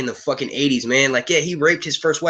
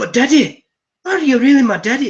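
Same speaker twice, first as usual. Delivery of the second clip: high, loud, badly faked Irish accent; 10 semitones higher, 5 dB louder than usual. Voicing a preteen Jon Snow figure asking Ned Stark, in a fake Irish accent. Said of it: "Why am I making him sound fucking Irish?".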